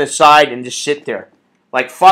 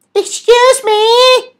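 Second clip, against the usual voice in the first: very high, extremely feminine, effeminate voice; 4 dB louder than usual. Complaining about a guy interrupting a conversation to clear plates, imitating an extremely feminine guy. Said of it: "he's like kind of feminine, extremely".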